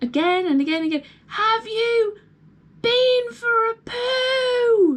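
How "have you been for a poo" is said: very slow high yell, poo drawn out. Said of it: "obviously screaming it at them".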